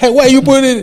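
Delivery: very high-pitched, loud, scolding shout. Retelling a mother's reaction to pouring milk: imitating mom shouting. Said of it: "I can hear my mom's voice shouting at me".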